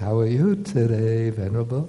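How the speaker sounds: sugary, charming, honeyed sweet voice. Acting out a girl bringing him food and greeting him: imitating a sweet voice. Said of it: "speaking to him with the sweet voice".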